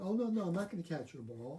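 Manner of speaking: ordinary talk, nothing marked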